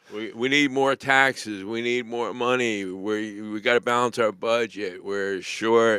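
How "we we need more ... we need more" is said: usual speaking voice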